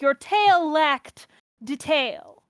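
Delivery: very slow, deliberate delivery in mid-Atlantic accent. An actor shows how they said a character's line, in a mid-atlantic accent. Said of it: "a mid-Atlantic, transatlantic kind of thing".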